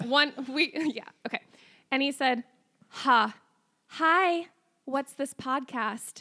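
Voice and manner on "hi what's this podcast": very slow, drawn-out feminine voice. Retelling what a man said to them: feminine voice for a man. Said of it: "why did you give him like such a feminine voice?".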